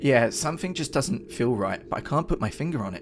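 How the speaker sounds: ordinary delivery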